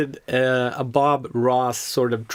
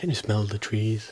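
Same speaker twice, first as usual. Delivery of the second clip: put-on calm painter voice, quieter; 2 semitones lower, 5 dB quieter than usual. Joining in imitating the TV painter: calm Bob Ross voice. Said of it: "he had this calm voice".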